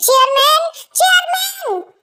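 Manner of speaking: loud, high-pitched, calling-out shout. A character calls out to the chairman: shouting. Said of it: "इतना क्यों चिल्ला रहे हो?".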